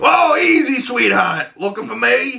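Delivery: very high-pitched character voice. Quoting the first time Batman shows up: Penguin voice. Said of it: "it's got such a good voice".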